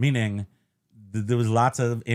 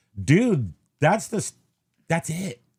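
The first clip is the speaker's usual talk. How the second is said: plain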